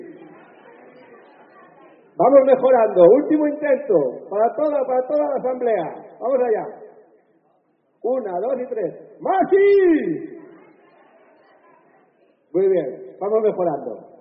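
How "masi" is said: very high, belted-out shout. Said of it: "voy a gritar".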